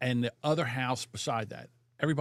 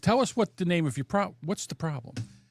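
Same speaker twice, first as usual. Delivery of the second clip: mock automated phone system voice; 3 semitones higher than usual. Caller retelling a call to the internet provider, imitating Verizon's automated phone AI. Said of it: "I'm fighting with the A I".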